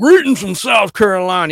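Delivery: put-on loud, thick, heavy South Carolina Southern accent. Retelling how a viewer always greets in comments: thick Southern accent imitating Danny. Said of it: "He's got a real thick Southern accent".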